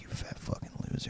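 breathy, whispered, taunting insult. Joking about ASMR episode ideas, doing mock bullying ASMR voice. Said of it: "junior high bullying A S M R".

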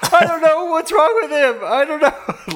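mock frantic, panicked fretting, pitched very high. Acting out Nathan Fielder's reaction to a kid overdosing, imitating Nathan Fielder freaking out. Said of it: "it was him freaking out".

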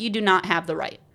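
ordinary talk, nothing marked

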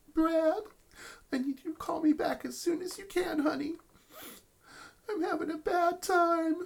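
saddest, sweetest little voice, very high, puppy-dog style. A character leaves a phone message, in a sad, sweet puppy-dog voice. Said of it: "the saddest, sweetest little puppy dog voice".

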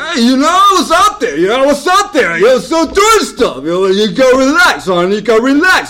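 very loud, very high belting voice. Acting out a scene, waiting partner asks where he was: Arnold Schwarzenegger impression. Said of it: "this is Arnold Schwarzenegger and Sylvester Stallone".

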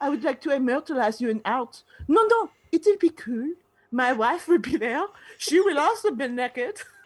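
put-on German accent. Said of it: "I'm turning him German".

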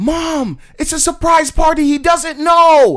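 very high, very loud, straight-up yell. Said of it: "it was a straight up yell".

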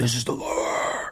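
low, whispered demonic metal growl. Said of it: "this is different type of screaming".

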